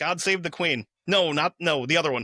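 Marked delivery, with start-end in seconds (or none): none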